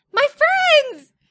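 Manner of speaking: put-on very high, shrill, loud tiny cartoon-girl voice. Retelling a three-year-old girl coming over to greet them, in a little cartoon girl voice. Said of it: "it sounded like a little cartoon girl".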